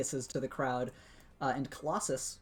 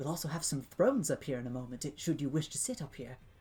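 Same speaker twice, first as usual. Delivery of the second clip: hushed whisper under the breath. Narrating a game scene, the speaker voices a man privately telling the players something, whispering. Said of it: "he kind of whispers to you guys and says".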